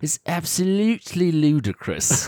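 very high British accent, put on for fun. Sharing favorite British phrases used at home, put-on British accent. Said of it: "sounds really fun in a British accent".

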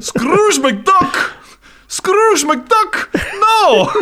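very high, slow, upset wail. Retelling a scottish guy's reaction to a joke: imitating an upset scottish guy. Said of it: "he kinda lost his shit".

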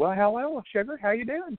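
Southern waitress voice, pitched very high. Retelling a waitress greeting at a Cracker Barrel down south: imitating a Southern waitress. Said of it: "the waitress was like".

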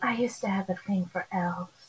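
sultry, sexy put-on starlet voice, like a screen siren. Demonstrating how to say a line to the elves: sexy Marilyn Monroe voice. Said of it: "do it like a sexy Marilyn Monroe".

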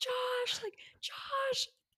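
very high, frantic screaming yell. Retelling spotting him in a movie theater, reenacting screaming his name. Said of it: "I am screaming my head off".

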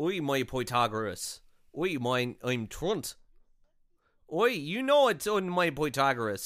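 put-on, mock Irish accent. Improvising a character who might be Irish, Irish accent. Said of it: "what if he's Irish?".

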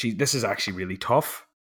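ordinary talk, nothing marked

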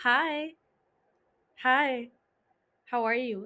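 flirtatious, flirty tone. Greeting a rich, single stranger at an Oktoberfest, in a flirty tone. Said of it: "Did you see how the tone of my voice changed to my flirty self?".

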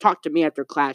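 ordinary talk, nothing marked

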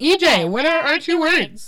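high-pitched words pushed out through a burp. Starting the word game, the speaker asks a fellow player for the words, belching. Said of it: "Sorry, I'm belching".

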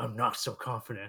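put-on scratchy, raspy man's voice. Trying to say a line in his voice: raspy imitated voice. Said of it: "he sounds like he has a raspy voice".

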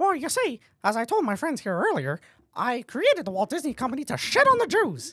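high, swooping cartoon mouse character voice. Asked how it feels leading the company, answering in a Mickey Mouse voice. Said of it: "Well, Mickey".

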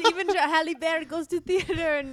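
loud, mock French accent.

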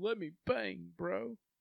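acted very high, drawn-out drunken crying. Retelling what a fighter said on a reality show: imitating a drunk, crying man. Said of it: "blackout drunk and crying".

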